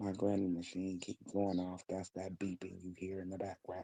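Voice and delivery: hushed, very quiet half-whisper. Explaining the beeping heard in the background of a call: half-whispering. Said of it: "I'm whispering".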